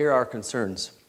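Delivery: normal talking voice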